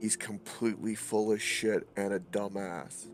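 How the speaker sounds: acted character whisper. Voicing a character who leans to another's ear: whispering in character. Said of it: "he whispers into, into Gorian's ear and goes".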